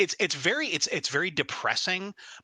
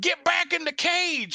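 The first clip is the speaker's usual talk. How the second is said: put-on very high, deliberate, drawn-out shouted yell; 4 dB louder than usual. Describing a father's calls to the mother, retelling his yell. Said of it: "Like he's yelling at".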